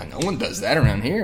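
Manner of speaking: ordinary talk, nothing marked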